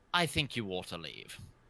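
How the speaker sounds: very stern, severe, firm. Voicing a church leader telling a player to leave: very stern voice. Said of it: "and then very sternly says".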